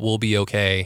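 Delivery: plain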